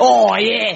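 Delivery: put-on trying an Essex accent. Trying out the accent of a guy from essex: essex accent. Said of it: "I've gotta get the accent".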